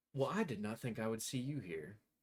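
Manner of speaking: silky, sugary, sweet, smooth Southern drawl. Voicing a satyr character surprised to see someone, sweet smooth southern drawl. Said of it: "southern drawl, sweet, smooth voice".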